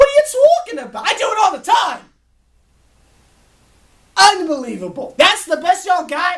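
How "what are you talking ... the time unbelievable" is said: fake, put-on Brooklyn accent, sing-song. Telling someone to drop their vocal fry, the speaker shows a fake Brooklyn accent. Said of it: "I'll give you a better fake Brooklyn accent".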